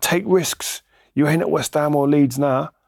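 high-pitched, scolding scream. Retelling a teammate screaming at him after a pass: imitating someone screaming. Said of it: "started screaming at me, like".

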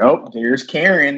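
high, sarcastic, tongue-in-cheek delivery. Recalling a sister's remark about an image of a screaming woman: retelling a sarcastic remark. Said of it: "she was like saying this sarcastically".

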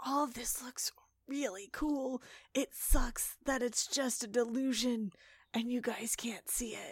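whispered voice. Playing a character filming things others can't see, whispering to the camera. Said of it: "I'm whispering to the camera".

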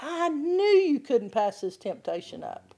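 mock scolding, accusatory, swooping, condemning taunt. Acting out the inner voice that condemns you after giving in, mock-condemning. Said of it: "start condemning you and telling you".

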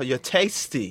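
put-on sudden short yell in a British accent. Retelling a fight where someone yelled tasty: imitating Pauly's British accent. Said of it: "yelling "tasty" in his little British accent".

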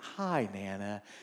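mock honeyed, extra-sweet, sugary voice. Acting out someone greeting nana, imitating a sugary-sweet greeting. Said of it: "put some sugar on it. Like, you got to be sweet".

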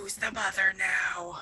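menacing, threatening whisper. Playing a character in a tabletop game, threatening a captive: whispering menacingly. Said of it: "whispering in her ears, going".

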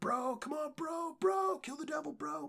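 put-on shrill cheering shout, very high pitched. Talking about a game they loved, the speaker re-enacts their shouting: retelling their own shouting. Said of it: "We were just shouting for".

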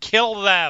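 guttural, scratchy, loud screeching monster voice. A game master voices a creature during a tabletop game: screeching creature voice. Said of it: "it screeches out".

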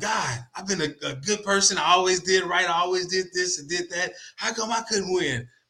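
put-on angry yelling, aggrieved tone. Retelling a story of a man who yells at the sky: imitating someone yelling angrily. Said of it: "He just yelled at, at the sky".

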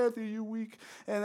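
put-on mocking laughter. Retelling how the cool kids' team laughed at anthony, imitating mocking laughter. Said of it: "was just laughing like eh".

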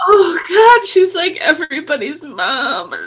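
choked-up, high-pitched crying voice, weeping through words. After a sweet greeting from Mama True, speaking while crying. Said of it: "I knew you were going to cry".

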